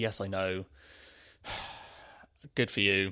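unmoved, passive, exasperated tone. Retelling her reply to an excited thank-you call: imitating someone passive and exasperated. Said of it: "she was just literally passive and exasperated".

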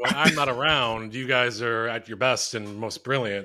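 plain

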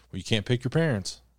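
casual, offhand, unbothered. Retelling a guy's reply about a dead father: imitating someone nonchalant. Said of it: "he was so nonchalant about it".

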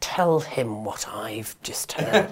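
slow, hushed, conspiratorial whisper.

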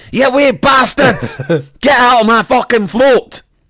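put-on high-pitched shout in a Scottish accent. Retelling how the milkman chased kids off his float: imitating a Scottish man shouting. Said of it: "he was a Scotsman, so it'd be very funny".

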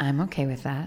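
deep, soft, hushed, sultry murmur. Speaker imitates how the other person says a phrase, imitating a sexy voice. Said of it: "My sexy voice?".

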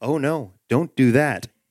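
ordinary delivery

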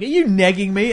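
loud, shrill voice. Retelling how a woman answers a whispered neg: imitating a woman being really loud. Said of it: "and then the woman's really loud".

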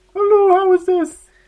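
very high-pitched, very loud, put-on woman's voice. Asked to pretend to be the lady who phoned in, in a put-on woman's voice. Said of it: "can you put on a lady's voice?".

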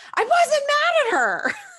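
very high, stretched-out, drawn-out yell. Retelling what a woman on a show yelled: imitating someone yelling.

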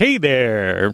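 breezy, chummy, jaunty and awkward tone. Retelling an awkward hologram phone call, imitating Greef's jaunty greeting. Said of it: "So jaunty".

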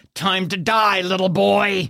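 hissed, slowed down. Game master voicing a guardsman pinned on top of the player, hissing into the ear. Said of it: "You hear him hiss into your ear".

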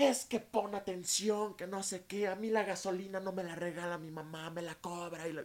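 mock, very high-pitched, shrill, loud angry yell. Speaker retells being yelled at after a wrong turn while driving, retelling a scolding yell. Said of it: "neta me gritaba como de".

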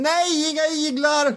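play-acted, very high, shrill, shrieking scream. Retelling how a patient wakes under leeches: imitating someone screaming. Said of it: "så skriker han".

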